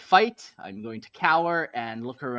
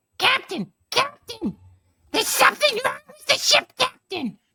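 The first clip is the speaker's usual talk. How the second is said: squeaky, very high, loud goblin shout; 6 dB louder than usual. Player's character calls to the captain across the battlefield: yelling in a grot voice. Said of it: "I try yelling at him from across".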